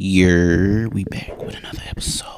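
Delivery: hushed whisper. Host opening another episode before a Bible reading, whispering. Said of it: "I don't know why I'm whispering".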